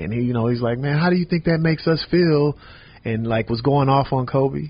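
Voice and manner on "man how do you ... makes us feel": mock upset, worked-up, emotional, pitched-up delivery. Retelling a teammate's reaction during a film session, imitating someone getting emotional. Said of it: "he got real emotional".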